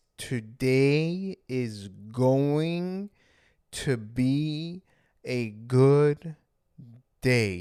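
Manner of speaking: very slow, calm, unhurried, drawn out. Showing listeners how to say a calming sentence during racing thoughts, slowly. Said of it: "say it slowly. Say it like this".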